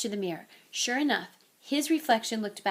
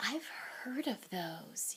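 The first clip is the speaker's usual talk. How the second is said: very quiet, hushed, under the breath; 14 dB quieter than usual. Reading a character's line as he gasps at what was unwrapped, hushed voice. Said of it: "he said in a hushed voice".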